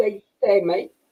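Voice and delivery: soft, bad Australian accent drifting into Irish. Speaker admitting they can't do it tries a bad Australian accent. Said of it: "Is that Australian or is that Irish?".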